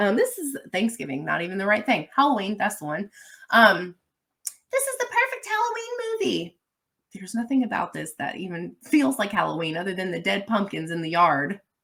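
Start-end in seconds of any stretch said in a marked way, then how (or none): 4.7-6.6 very high, swooping, sing-song internet-style put-on voice. Retelling what people online say about a film, imitating people on the internet. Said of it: "That's my voice I use for people on the internet".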